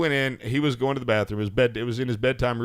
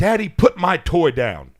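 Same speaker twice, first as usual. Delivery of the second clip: put-on high, drawn-out, serious, insistent child's voice; 5 semitones higher, 5 dB louder than usual. A father retells his son's reaction, imitating a serious child. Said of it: "And he was serious".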